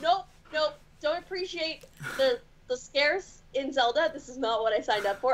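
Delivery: ordinary talk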